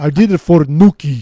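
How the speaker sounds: loud, exaggerated, over-the-top put-on Russian accent. Attempting a german accent, the speaker ends up in an over-the-top russian accent. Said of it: "You sound Russian".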